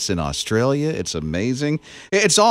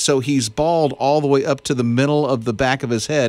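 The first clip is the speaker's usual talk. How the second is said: usual speaking voice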